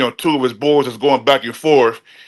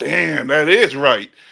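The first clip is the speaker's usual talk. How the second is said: put-on laughing while speaking. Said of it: "busting up laughing, like".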